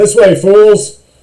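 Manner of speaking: loud echoing boom. Narrator voices a voice echoing through the halls at the players: booming voice. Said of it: "You hear a booming voice echo through the halls".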